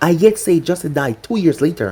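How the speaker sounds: ordinary delivery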